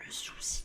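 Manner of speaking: voiceless, hushed, breathy whisper. Trying how the word 'souci' sounds, whispered. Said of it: "je pense que ça rend bien en chuchotant".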